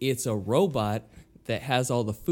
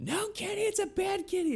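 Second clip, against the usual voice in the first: very high, shrieking, scolding scream; 5 dB quieter than usual. Retelling what plays from the kitchen at feeding time: imitating Cartman screaming. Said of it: "Cartman screaming".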